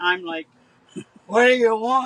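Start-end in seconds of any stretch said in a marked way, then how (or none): 1.3-2.1 booming, very loud, put-on manly voice. Retelling how someone tugged the car door at night, the speaker asks in a put-on manly voice. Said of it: "In this manly voice".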